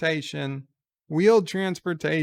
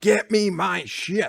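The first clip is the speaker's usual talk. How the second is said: mock furious, angry villain voice; 3 semitones higher than usual. Retelling what an evil character in a show says: imitating an angry villain voice. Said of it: "he's got a much angrier voice".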